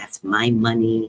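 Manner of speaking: very deep, low mumble to himself. Telling a story, the speaker acts out a man walking away, imitating a man mumbling to himself. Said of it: "he's like mumbling to himself".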